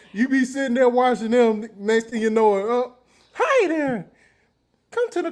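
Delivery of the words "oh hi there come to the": high, swooping cartoon mouse voice. Talking about the show his nieces and nephews watch, doing a Mickey Mouse voice. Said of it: "you did a whole Mickey Mouse voice".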